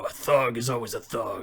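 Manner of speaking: gritty, rough put-on voice. Showing how the audition line could have sounded: grittier Adam Jensen-style voice. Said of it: "it a lot grittier".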